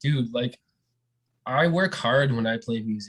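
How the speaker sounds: ordinary talk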